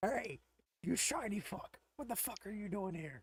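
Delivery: rough, gruff, subdued voice. Game narrator voicing an unseen figure calling out to the players: gruff voice. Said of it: "a gruff voice call out to you and says".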